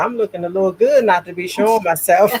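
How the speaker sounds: ordinary delivery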